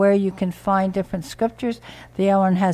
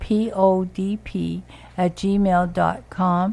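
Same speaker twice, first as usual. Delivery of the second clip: said a little more slowly. Repeating a donation email address for radio listeners, a little slower. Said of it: "I should say that a little slower".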